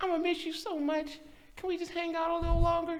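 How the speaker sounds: really high-pitched, put-on girly voice. Retelling what a girl said while driving him to the dorms, imitating her high-pitched voice. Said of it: "She was a really high pitched voice".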